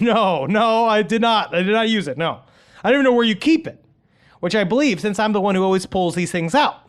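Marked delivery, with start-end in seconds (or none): 0.0-3.8 put-on delivery repeatedly broken up by laughter. Retelling a boyfriend's denial: imitating someone laughing while talking. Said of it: "He starts laughing and saying".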